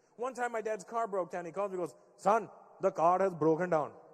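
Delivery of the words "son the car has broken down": put-on Indian accent, louder. Retelling his dad calling him when the car broke down, imitating dad's indian accent. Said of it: "My dad had the ability to make everything sound Indian".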